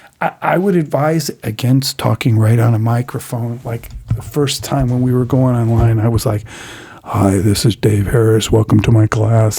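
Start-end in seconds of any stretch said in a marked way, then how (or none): 7.0-9.6 full-on, deep fm radio disc jockey announcer voice. Teacher recalls greeting his first online class, in FM radio announcer voice. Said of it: "I had the total FM voice".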